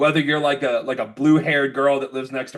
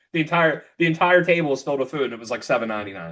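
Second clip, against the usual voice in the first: ordinary talk, nothing marked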